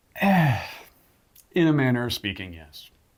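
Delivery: unhappy, unenthusiastic delivery. Answering whether they got what they wanted for christmas, sounding unhappy. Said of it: "you don't sound very happy about it".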